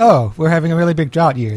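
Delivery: plain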